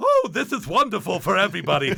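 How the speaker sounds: high-pitched, swooping, goofy voice. Recalling voicing a goofy character, doing an Ed Wynn voice. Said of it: "I started doing my Ed Wynn voice".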